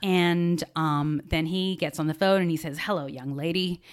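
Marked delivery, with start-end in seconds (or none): 2.8-3.8 mock-jovial, put-on hearty tone. Retelling a phone call, the speaker imitates a man greeting her, imitating a jovial voice. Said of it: "he has this jovial voice".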